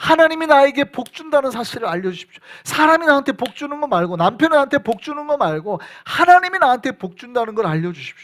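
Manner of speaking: high, loud pleading cry.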